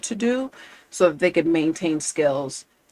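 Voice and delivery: ordinary talk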